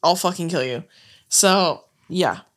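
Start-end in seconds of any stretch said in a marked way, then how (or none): 0.0-0.8 mock evil, menacing, threatening voice. Retelling how they react when a bit goes too far: acting evil, threatening. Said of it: "I start being, like, evil".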